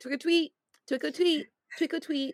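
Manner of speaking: very high, cutesy, tiny little voice. Retelling a cute character's line from a horror short: imitating a little voice. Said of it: "And his little voice".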